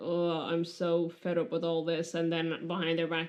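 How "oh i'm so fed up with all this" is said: snarky, put-upon, weary, sarcastic fed-up tone. Describing how a character is played, acting out his lines; acting out tired, fed up. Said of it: "plays this like tired".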